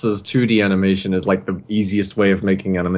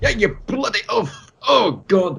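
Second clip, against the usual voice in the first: high, mock angry Scottish accent. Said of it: "Be angry and Scottish?".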